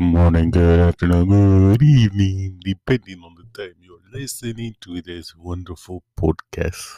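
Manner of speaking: put-on vampire voice. Opening a podcast episode as its announcer, in a Count Dracula voice. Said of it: "I am Count Dracula".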